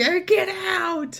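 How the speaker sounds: screeching, very high-pitched yelling. Retelling a scene where Krubs in a hazmat suit drives people away: imitating Krubs screaming. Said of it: "He's screaming".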